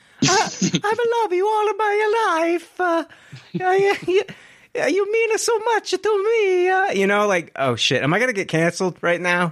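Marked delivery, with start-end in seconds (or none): 0.2-6.7 squeaky-high, very high, cartoonish, emotional character voice. Joking about an emotional movie scene between him and Peach: Mario voice. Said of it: "an emotional scene between him and Peach".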